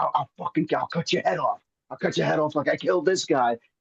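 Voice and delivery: play-acted unhinged, fast, crazed voice, tripping over words. Retelling the guy with the paper bag getting worse, imitating a crazed threat. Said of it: "he gets real crazy".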